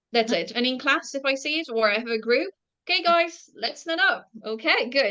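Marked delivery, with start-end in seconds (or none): 2.9-5.2 raised voice, pitched up, calling out. A teacher showing how they address a group in class: raised voice. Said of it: "So I'm raising my voice as well, like now".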